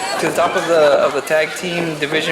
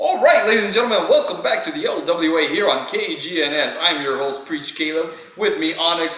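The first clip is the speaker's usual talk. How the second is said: played-up, put-on radio announcer patter. Practicing a radio voice while introducing the show, radio announcer voice. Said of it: "I'm practicing my radio voice".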